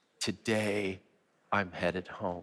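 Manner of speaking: soft, slow half-whisper with no voice. Leading everyone to half-whisper the words together: half-whispering. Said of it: "Say it one more time".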